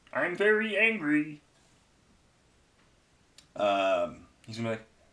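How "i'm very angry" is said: very high, shrill, loud put-on character voice. Comparing a friend's voice to a cartoon: Marvin the Martian voice. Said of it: "Or Marvin the Martian".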